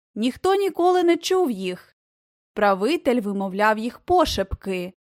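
ordinary delivery, nothing marked

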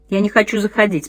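ordinary delivery

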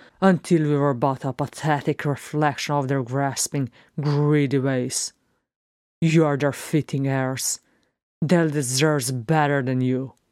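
usual speaking voice

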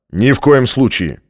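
sharp, curt, snapped, cut short. Strathmore answers Hale's demand to open the lift; snapped curtly. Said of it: "отрезал Стратмор".

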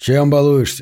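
plain reading voice

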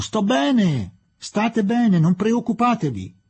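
high-pitched shouted call. Narrator reading a man's line as he gets up and shouts after them: shouting after them. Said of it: "urlò dietro di loro".

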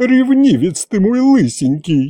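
tenderly moved, fond, doting, high voice. Aunt Yaguta speaks to the suspicious grandfather, tenderly touched. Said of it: "умилилась тетка Ягута".

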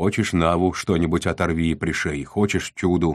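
plain reading voice

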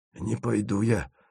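frightened, hushed, croaked hoarse rasp. Narrating a cowering man backing away from the others, rasping. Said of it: "прохрипел он".

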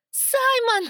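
anguished, desperate cry, very high and loud. The narrator, not turning around, shouts to the fiery one: desperate anguished shout. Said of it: "надрывно прокричала я".

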